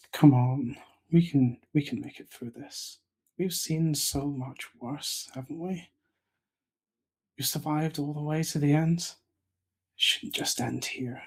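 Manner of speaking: hushed, soft whisper. In a tabletop game, a player voices her character speaking to another character, whispering. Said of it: "she she whispers to Davy".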